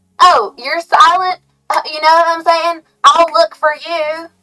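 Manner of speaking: put-on country accent. Voicing what a country said, in a put-on country accent. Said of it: "that was a wrong accent".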